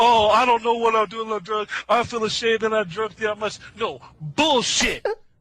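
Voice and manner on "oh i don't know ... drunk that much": mocking put-on voice. Mocking another speaker's apology for drinking: mocking imitation of someone. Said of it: "You talking about".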